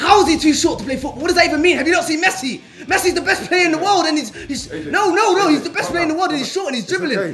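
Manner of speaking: getting angry. Ranting about people calling a player too short for football, getting angry. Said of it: "I'm actually getting angry right now".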